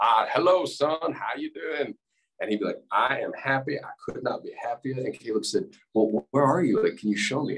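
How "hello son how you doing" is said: put-on old man voice, booming, much higher, slower. Retelling a dream where a man meets his grandfather, in Max's booming voice. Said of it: "had this beautiful booming voice".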